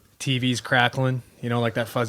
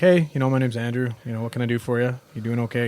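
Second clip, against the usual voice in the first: ordinary talk, nothing marked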